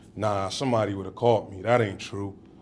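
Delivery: ordinary talk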